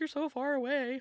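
mock, very high, weepy crying voice.

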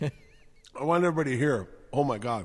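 talking with mouth full. Reacting to a dumpling while eating, chewing while talking. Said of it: "I'm chewing on".

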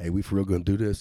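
mock hushed whisper. Retelling what another man whispered to him after kneeling down, low whisper. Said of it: "whispered almost like in a low tone voice".

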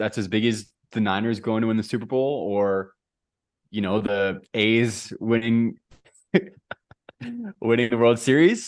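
talking through bursts of laughter. Congratulating the other speaker on a championship, laughing while talking. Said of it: "you can't even say it without laughing".

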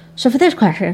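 frenetic, rushed, jumbled words run together. Complaining about a man who talks too fast, the speaker is imitating fast jumbled talk. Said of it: "He talks so fast, frenetically fast, and he jumbles his words".

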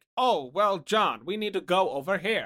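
stiff, wooden acting voice. Mocking the acting in crappy 80s movies, in a stiff, wooden acting voice. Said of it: "The acting feels so like".

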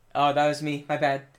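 ordinary delivery

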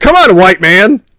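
put-on impatient child voice. Retelling the son waiting at a crosswalk, imitating an impatient son. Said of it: "he'd get impatient".

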